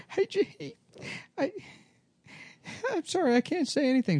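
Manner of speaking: very high, very slow, tearful crying voice. Retelling a show, the speaker voices a crying woman: imitating someone crying. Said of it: "The woman's just crying".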